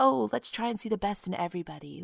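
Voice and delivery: soft, put-on, naive people-pleaser voice. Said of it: "But I'm just like".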